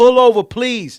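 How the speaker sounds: pleading scream, shrill, very high and very loud. Retelling a road rage incident, imitating own screaming plea.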